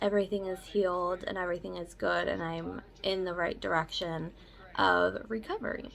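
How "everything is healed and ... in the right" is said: ordinary talk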